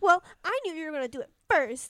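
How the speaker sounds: put-on little-kid voice. Retelling a scene, quoting a character caught cheating: imitating Lilith sounding like a little kid. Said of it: "she sounds like a little kid".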